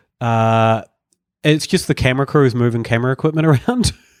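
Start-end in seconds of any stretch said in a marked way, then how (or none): none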